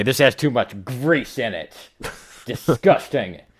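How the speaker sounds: acted-out condescending, disdainful tone, pitched high. Imagining him as the new host of Man vs. Food, mock-condescending Bill Maher. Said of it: "he could be condescending about anything".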